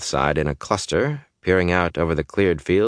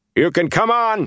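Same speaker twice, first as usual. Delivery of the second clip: very high-pitched, loud calling shout; 12 semitones higher than usual. A rider standing in his stirrups calls out to the Tinkers: shouted. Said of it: "he shouted".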